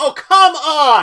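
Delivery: very high, very loud, frustrated shrill shout. The speaker breaks off mid-recap and bursts out: yelling. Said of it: "Honey, don't yell".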